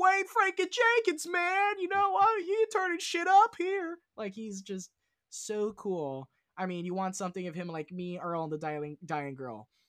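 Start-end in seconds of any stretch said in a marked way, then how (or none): 0.0-4.0 put-on shrill, booming, heavy Baltimore accent. Praising Bernthal's performance in a show, quoting him in a Baltimore accent. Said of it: "He's got the Baltimore accent".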